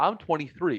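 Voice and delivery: normal talking voice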